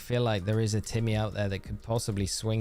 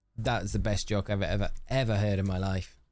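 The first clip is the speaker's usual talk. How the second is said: usual speaking voice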